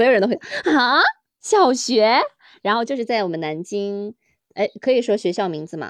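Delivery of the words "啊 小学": stunned, astonished, surprised disbelief. Retelling how everyone reacts on hearing of golf in primary school: imitating surprised people. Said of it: "你有没有很惊讶".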